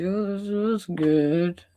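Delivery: high, slow put-on voice. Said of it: "that fake voice".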